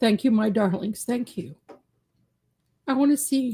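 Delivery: tearful speech, crying through tears. Speaker thanking listeners after hearing a probation recommendation; crying while speaking. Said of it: "Sorry, I'm crying".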